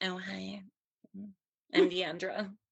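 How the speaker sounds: put-on fake girly voice, high and soft. Speaker mocks the kind of girl they will never be: fake-sounding put-on voice. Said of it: "that reads fake as fuck".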